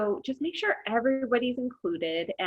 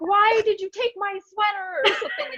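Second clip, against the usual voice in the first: imitated yelling, much higher, louder; 11 semitones higher, 5 dB louder than usual. Describing a woman on Zoom with her family watching, imitating her yelling at dough. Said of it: "she's like yelling at the dough".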